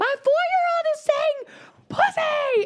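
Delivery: put-on scream. Retelling a complaint at a camp's front desk: retelling a scream. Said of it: "So I just started screaming".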